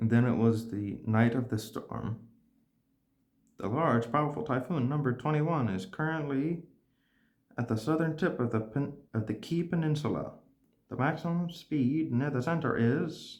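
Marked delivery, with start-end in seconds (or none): 3.6-13.4 broadcast news-anchor style announcer voice. Voicing a radio broadcast on the night of the storm, news radio announcer voice. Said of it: "How do y'all like my announcer, news, radio host voice?".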